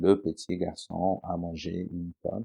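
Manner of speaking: flat, expressionless, level monotone reading. Showing how some children read aloud, flat monotone reading. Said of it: "de façon très euh, monotone".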